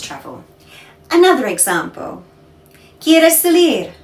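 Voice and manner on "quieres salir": statement tone on salir, with no question rise. Demonstrating spanish intonation to learners, saying the example with statement intonation. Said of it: "You want to go out?".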